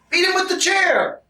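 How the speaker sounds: very high-pitched, worked-up, excited voice. Egging someone on, right after apologizing: a little excited. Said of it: "I'm getting a little excited".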